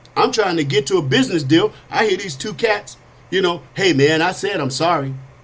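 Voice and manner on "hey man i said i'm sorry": ordinary talk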